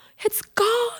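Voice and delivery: high, shocked squealing cry. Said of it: "we were just standing there like".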